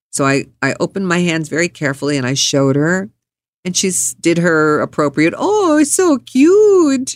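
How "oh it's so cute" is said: put-on high French accent, very slow, cute stretched. Retelling her reaction to what he showed her, with a french accent. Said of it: "with the French accent".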